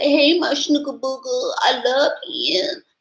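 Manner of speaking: put-on high-pitched baby talk. Mocking how some women speak to their man: imitating baby talk. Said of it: "She talks to him in baby talk".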